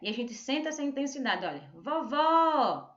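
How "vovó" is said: vovó with the stress on final syllable vó. Explaining where the accent mark goes, stress on vó in vovó. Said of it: "a segunda sílaba você vê que é mais forte".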